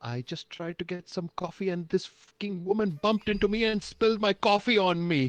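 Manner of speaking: very high, angry cursing rant, cursing up a storm. Voicing Kramer bursting in: Kramer cursing up a storm. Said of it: "cursing up a storm".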